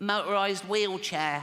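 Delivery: silly put-on kid character voice. Little Timmy, six, answers his father's question about Christmas: Timmy voice. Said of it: "I promised Jane I wouldn't do the voice".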